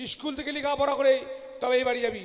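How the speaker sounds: bossy, shouted, commanding tone.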